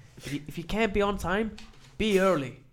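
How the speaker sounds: high, loud, bad American accent.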